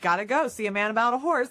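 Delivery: mock self-assured, confident tone. Retelling a line once used to end conversations: imitating own confident delivery.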